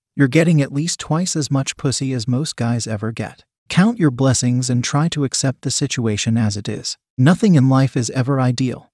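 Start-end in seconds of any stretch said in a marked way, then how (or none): none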